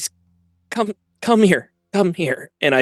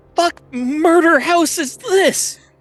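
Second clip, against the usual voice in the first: shrill, raw, very high yell. A player speaking in character during their turn, yelling. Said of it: "And I'm yelling at this point".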